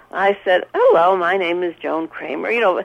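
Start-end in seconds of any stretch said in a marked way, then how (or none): 0.7-2.4 meek, proper, very demure and polite tone. Retelling her own words on the phone: imitating her own demure voice. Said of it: "very, very demure".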